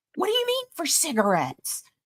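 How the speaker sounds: agitated, high, swooping freaking-out outburst. Retell how he reacted to being told about the twenty-five dollars, imitating someone flipping out. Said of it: "And he flipped out".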